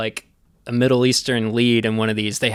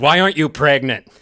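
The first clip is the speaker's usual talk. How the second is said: mock no-nonsense, blunt, abrupt tone; 3 semitones higher, 4 dB louder than usual. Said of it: "he just walks up behind her and goes".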